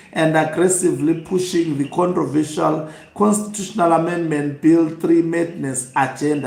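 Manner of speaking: ordinary talk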